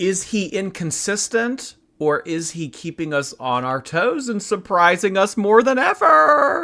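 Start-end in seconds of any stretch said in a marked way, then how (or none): 5.4-6.7 voice breaking mid-line, high and cracking. A streamer talking to chat at the start of a morning stream, voice cracking. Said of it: "the voice crack".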